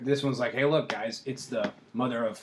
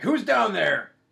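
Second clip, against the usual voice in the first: high, loud croaking voice; 10 semitones higher, 6 dB louder than usual. Game master voicing someone calling down from above, Farblex's loud croaking voice. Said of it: "one really loud croaking voice be like".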